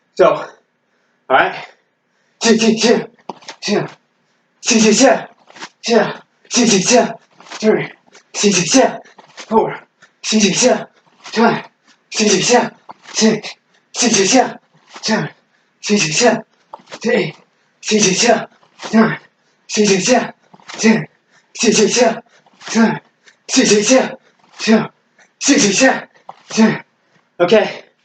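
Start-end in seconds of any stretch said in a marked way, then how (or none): 2.4-26.8 high, panting delivery while breathing hard. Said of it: "Now I'm breathing hard".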